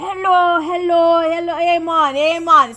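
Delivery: slow, fake, badly done Jamaican accent. Retelling a tour guide who switched his accent, doing his bad Jamaican accent. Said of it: "he changes his accent".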